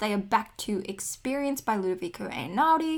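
ordinary delivery

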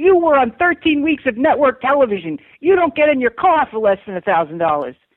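high-pitched, loud screaming. Retelling a phone call about a gig: imitating Susie Essman screaming. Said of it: "And she just screamed at me".

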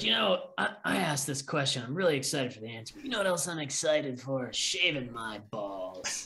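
strained promo-read voice, pushed hard. Imitating a podcast host plugging a product: Steve-O impression. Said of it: "You do a pretty good Steve-O".

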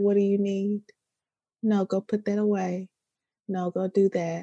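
acted quiet, straight, flat, level monotone. Speaker praises g's parenting style, mimicking her talking to them: imitating g's flat monotone. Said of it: "she be so straight monotone".

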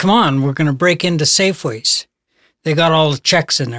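ordinary delivery

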